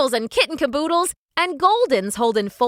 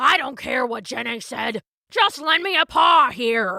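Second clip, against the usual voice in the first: rough, muffled canine voice. Narrating a story, voicing Rambo the pit bull in a gruff, muffled voice. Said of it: "came a gruff, muffled voice".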